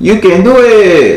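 high, loud put-on Mexican accent. Speaker repeats the spirit's message for her: Mexican accent. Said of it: "in my beautiful Mexican voice".

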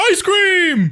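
full-hearted, said with real passion behind it. Trying out voice acting for a friend, say it passionate. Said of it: "That had passion to it".

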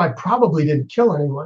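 ordinary talk

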